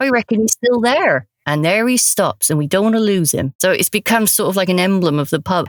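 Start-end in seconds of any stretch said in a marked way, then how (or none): 0.0-1.3 put-on higher-pitched Suffolk accent. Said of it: "Suffolk accent".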